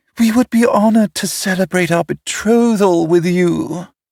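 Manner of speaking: mocking, high falsetto voice. Narrator reading Gluttony quoting an invitation to his brothers, Gluttony in falsetto. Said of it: "Gluttony said in falsetto".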